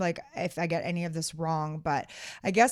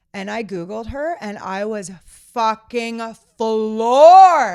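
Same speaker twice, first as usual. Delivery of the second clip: full-on yell, very loud and drawn out; 4 semitones higher, 13 dB louder than usual. Speaker retelling a conversation to others, caught up and yelling. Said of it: "I'm yelling in your ears".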